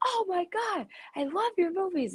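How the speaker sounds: loud yelling. Retelling a stranger calling out outside a store: imitating someone shouting loudly. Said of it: "really loud".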